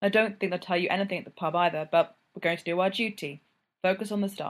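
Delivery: ordinary delivery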